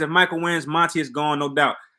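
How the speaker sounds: ordinary delivery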